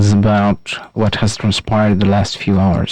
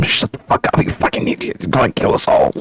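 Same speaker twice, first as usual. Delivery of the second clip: furious, angry, hissed whisper; 2 semitones higher than usual. Voicing soldiers scolding a boastful comrade: angry whisper. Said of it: "whisper to him".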